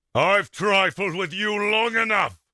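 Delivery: aggressive combative tone. Auditioning a line before combat: aggressive. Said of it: "He's trying to get aggressive".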